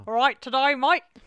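loud put-on Australian accent. Signing off the show with the co-host, in an australian accent. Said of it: "That's my Australian accent".

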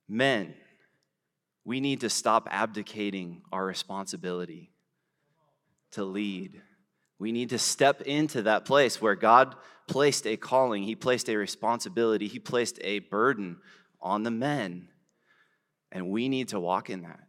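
ordinary talk

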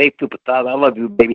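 put-on lisping voice, lisp on every s sound. Quoting what Dusty says to him, in a Dusty Rhodes lisping voice. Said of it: "when Dusty talks with a lisp, ... That's how he talks in his Dusty Rhodes voice".

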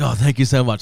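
ordinary delivery

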